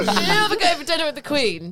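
high, loud scolding shout. Retelling being told off as a child at eleven: imitating Mum shouting. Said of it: "She used to shout at me and she used to be like".

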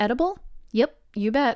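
put-on bone-dry, deadpan, unbothered delivery. Retelling how the people accepting deliveries answered him, imitating a deadpan reply. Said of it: "look me deadpan in the eye and be like".

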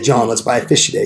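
usual speaking voice

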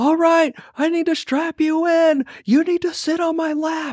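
shrill, very high-pitched, yelled holler. Retelling what a man yelled at the speaker over a roaring plane, imitating someone yelling. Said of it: "He's like yelling at me".

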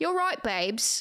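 spoken in an Essex accent. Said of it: "Like [name]'s accent".

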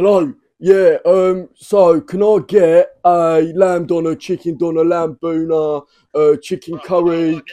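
high, loud, thick, fake Cockney accent. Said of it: "I've got to do a Cockney accent".

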